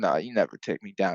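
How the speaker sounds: relaxed, unhurried put-on voice. Retelling DC and Islam arguing about takedowns, doing a slow laid-back Islam impression. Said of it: "laid back and speaks so slow".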